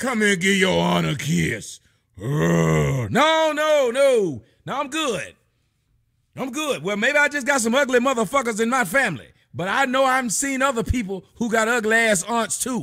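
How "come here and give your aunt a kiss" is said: put-on manly voice, lower. Imitating a manly-voiced aunt calling for a kiss: imitating a manly-voiced aunt. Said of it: "manly ass aunt".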